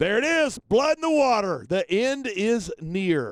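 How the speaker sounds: thrilled, gleeful, relishing excited commentary voice. A wrestling commentator calls a bloody match to a co-commentator, excited. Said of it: "How can you sound so excited".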